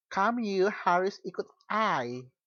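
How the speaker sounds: slow, high Indonesian with English accent.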